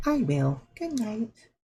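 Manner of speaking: clumsy, high, slow put-on feminine voice. Reading a game's dialogue aloud, voicing a female character in a bad feminine voice. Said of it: "Pretty bad at these feminine voices".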